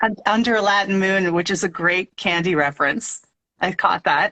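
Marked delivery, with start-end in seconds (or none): none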